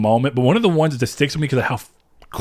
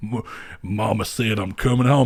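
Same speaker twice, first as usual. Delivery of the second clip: silly, ridiculous, exaggerated over-the-top Texas accent; 3 semitones lower, 3 dB quieter than usual. Explaining a choice of cowboy hats, in a ridiculous Texas accent. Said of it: "use a ridiculous Texas accent and say stuff like".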